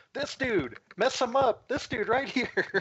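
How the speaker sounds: very high-pitched, shrill yell. Acting out a character pointing at an enemy and urging an ally: yelling. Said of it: "and yell at Thargus".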